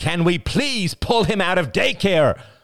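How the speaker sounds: very high, passionate, impassioned cry. Ian turns to his wife while his son struggles, crying out passionately. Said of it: "Ian cried out".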